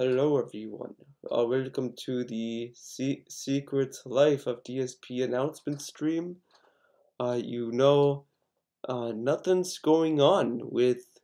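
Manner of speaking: drowsy, very soft, slow, drawn-out voice. Imitating how the listener sounded opening the announcement stream, imitating a sleepy delivery. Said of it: "sounded like everyone was ready to go to sleep".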